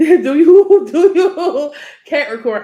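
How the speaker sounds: talking through laughter, high-pitched and drawn out. Pressing the listener after a blunt remark, laughing while talking. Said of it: "I know I'm laughing".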